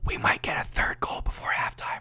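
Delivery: whispered softly. Calling a game before halftime, making a whisper prediction: whispered. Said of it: "I'm just gonna whisper it. This is gonna be a whisper prediction".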